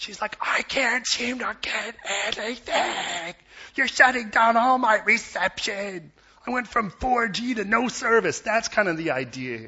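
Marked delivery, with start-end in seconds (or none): 0.4-8.4 shrill, loud, furious screaming, freaking-out rant. Retelling how a young woman came out screaming at a kid, retelling a woman screaming. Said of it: "she was screaming at this kid".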